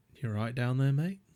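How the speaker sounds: put-on, unbothered, relaxed, very calm and easy voice. Retelling waking face down in the road, quoting a man standing over the speaker, imitating a very calm voice. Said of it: "very calm".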